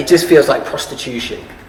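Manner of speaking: plain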